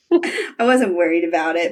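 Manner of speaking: shy, blushing, bashful voice. Retelling a scene from the show, imitating Shane sounding blushy.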